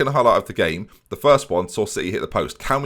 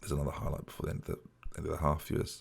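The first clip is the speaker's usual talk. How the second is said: very quiet, hushed whisper; 6 semitones lower, 17 dB quieter than usual. Commentating a football match to viewers, whispering. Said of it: "I'm whispering because".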